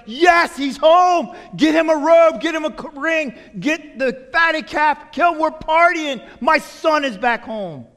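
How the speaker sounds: high, loud joyful yelling.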